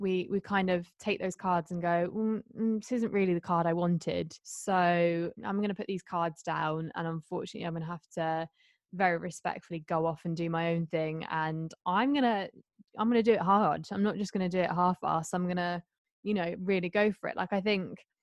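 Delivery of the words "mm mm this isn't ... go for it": plain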